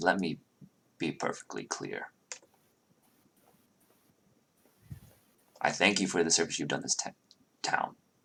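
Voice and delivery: stern fatherly voice, kept soft. Retelling what the father says, speaking in his dad voice. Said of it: "He's speaking in his dad voice now".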